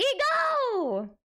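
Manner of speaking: very high, stretched, cracking, breaking voice. Streamer welcomes a guest named Ego, voice cracking. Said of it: "I don't know why my voice cracked".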